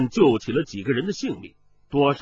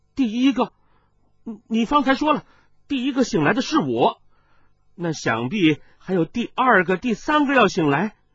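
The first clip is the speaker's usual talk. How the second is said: high, overjoyed, joyful cry of sudden realization; 8 semitones higher than usual. Narrator reads a man suddenly struck by an idea, crying out with joy. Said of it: "大喜呼道".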